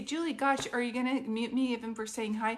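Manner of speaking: ordinary talk, nothing marked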